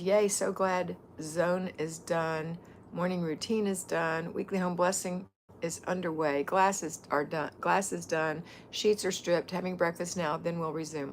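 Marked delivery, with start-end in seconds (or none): none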